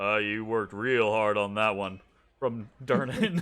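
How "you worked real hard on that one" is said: gruff, very low, deep character voice. Voicing Durnan calling over from the bar while cleaning a mug, gruff Durnan voice. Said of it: "kind of like gruff voice from over at the bar".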